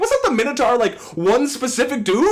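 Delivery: loud yelling. Retelling what was yelled at the book: retelling own yell. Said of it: "What was I yelling".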